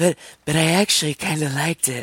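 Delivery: airy, breathy put-on voice. Retelling Polly's reaction to the cut, in a breathy Anna Faris voice. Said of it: "I'm doing my best Anna Faris breathy voice".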